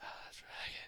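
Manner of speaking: very soft, breathy, barely voiced whisper. Voicing a character whispering to a player who hears a noise: whispering as Tony. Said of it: "Tony starts, like, like, whispering".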